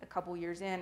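ordinary talk, nothing marked

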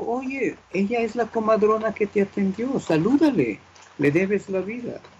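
bright, high-pitched parental tone.

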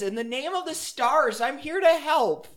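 shouting. A young elf runs in behind the others, yelling. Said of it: "and yells".

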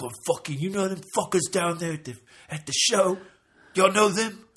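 aggrieved, irritated griping. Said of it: "He was pissed about it".

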